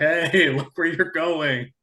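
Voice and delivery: light, half-hearted put-on hollering, called out. Retelling how a partner called to a drifting swimmer: imitating someone hollering. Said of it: "hollering at her".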